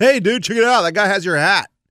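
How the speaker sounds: calling out.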